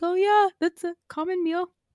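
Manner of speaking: put-on sci-fi sidekick voice, lifted up high. Speaker in a group conversation, doing a Chewbacca impression. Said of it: "that's what Chewbacca sounds like".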